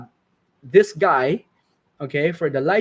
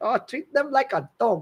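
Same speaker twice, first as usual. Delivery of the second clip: put-on heavy Singaporean accent laid on thick, pitched up; 7 semitones higher than usual. Imagining someone saying a remembered line: thick Singaporean accent. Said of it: "with a very thick Singaporean accent".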